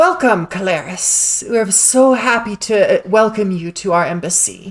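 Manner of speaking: sweet, nice-sounding, friendly, welcoming voice. A voice on personal comms welcoming calaris to the embassy: sounding really nice. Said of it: "They sound really nice".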